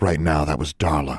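ordinary delivery, nothing marked

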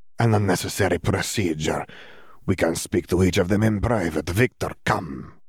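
brusque, dismissive, curt, demanding tone. Narrator reads a headmaster dismissing Riddle and calling Victor away: Karkaroff's demanding voice. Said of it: "his grin broadened, / Headmaster [name]".

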